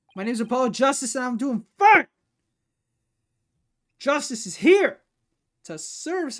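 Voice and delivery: full-throated, very loud, high-pitched shout. Asked if he's imitating Apollo's chords of steel, the speaker answers: imitating Apollo Justice yelling. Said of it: "I'm sorry for yelling".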